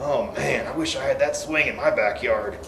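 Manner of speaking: hushed, carrying, loud stage whisper. Narrating a classmate's remark as a girl walks down the aisle, in a loud whisper. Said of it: "said in a loud whisper".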